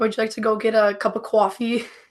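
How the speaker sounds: casual, everyday New York accent. Asked by the other speaker to say things like coffee, doing a New York accent. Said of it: "So can you just start saying like things like coffee".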